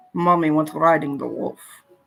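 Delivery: showy delivery, put-on Russian accent. Joking about a phrase to say when drunk: russian accent. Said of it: "I'm so good at a Russian accent".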